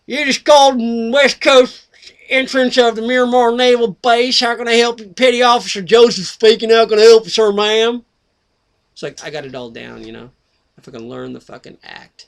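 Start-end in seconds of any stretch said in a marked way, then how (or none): 0.1-8.0 put-on booming, very loud, very high southern US accent. Speaker imitates naval base workers answering the phone: southern accent. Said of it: "they all talk like a southern accent like this".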